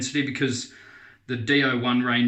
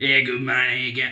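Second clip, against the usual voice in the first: put-on Australian accent. Describing an actor in movies slipping back into his accent, Aussie accent. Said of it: "And then he gets his Aussie".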